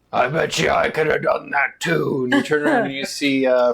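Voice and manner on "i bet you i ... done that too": big giant voice. Narrating a new voice heard behind the listeners, in a booming Goliath voice. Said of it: "you hear a booming Goliath voice".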